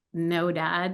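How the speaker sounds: ordinary delivery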